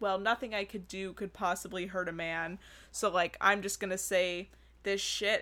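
plain

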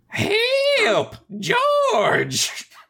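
put-on high, swooping, wild old-timey prospector cry, stretched "help". Speaker acting out how Clarence sounded in a scene, old-timey prospector voice. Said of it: "turned him into an old-timey prospector".

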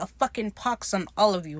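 put-on bitter, angry voice. Retelling a show scene where Izzy curses everyone: imitating Izzy angrily. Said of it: "the bitter, angry man he is".

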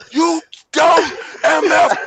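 shrill, gloating, very loud high-pitched yell. Speaker recounts the moment the last match ended, retelling a yell. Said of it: "I got up and I yelled".

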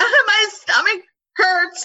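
put-on very high, tearful sobbing voice. Retelling what they said while sobbing: imitating own past sobbing. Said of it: "sobbing and not even telling them".

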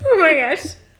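high-pitched, said through hard laughter. Reacting to another speaker's story about a faraway dorm, laughing a lot. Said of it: "I'm sorry I'm laughing so much".

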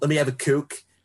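put-on Philadelphia accent.

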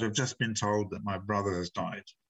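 usual speaking voice

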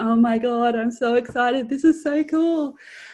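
put-on shaking excitement. Retelling sitting in the car before driving to the bookshop: retelling shaking excitement. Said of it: "like shaking".

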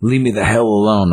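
put-on angry voice. Retelling a scene where Thor loses his temper at Blade, mock-angry Thor. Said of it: "And he gets madder".

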